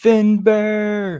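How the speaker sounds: screaming, high-pitched.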